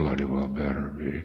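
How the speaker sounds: imitated mutter under breath. Retelling answering an early morning phone call: retelling a mutter under breath. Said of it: "under my breath".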